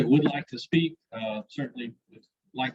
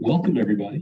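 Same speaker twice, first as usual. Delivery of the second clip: radio DJ announcer voice; 3 semitones lower than usual. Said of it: "That's your D J voice".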